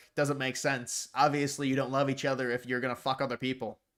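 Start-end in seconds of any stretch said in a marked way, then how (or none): none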